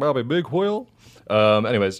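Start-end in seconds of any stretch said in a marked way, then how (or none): 0.0-0.9 put-on cartoon voice, much higher pitch. Reading out a listener's Twitter name on a podcast, in Hank Hill voice. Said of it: "That's a good name to say in Hank Hill voice".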